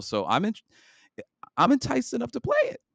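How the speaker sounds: excited, high-pitched. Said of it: "my voice got real high there".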